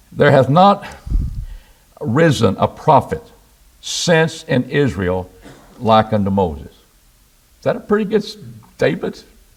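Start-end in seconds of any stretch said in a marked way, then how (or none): 0.2-6.7 slow, deliberate, halting reading with breaks. Reading a scripture verse aloud to listeners: reading slowly. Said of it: "I'm gonna read it slowly".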